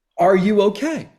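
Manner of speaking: high, called-out yell from far off. Telling how a man walked down the beach to check on the speaker, retelling a yell. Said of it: "he yells out".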